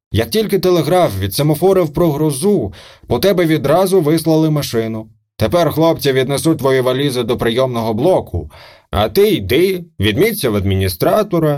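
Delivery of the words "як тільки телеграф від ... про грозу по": ordinary delivery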